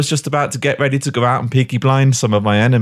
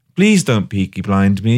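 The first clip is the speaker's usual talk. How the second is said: mock-crying, tearful voice; 4 semitones lower than usual. Retelling how the cornered hat thief begged the speaker: imitating someone crying. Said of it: "he's crying".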